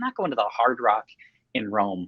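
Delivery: normal talking voice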